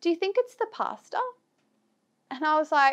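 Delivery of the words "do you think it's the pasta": put-on earnest, dead-serious tone, pitched up. Retelling a woman's question to the speaker: imitating a dead-serious question. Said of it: "she looks at me full serious".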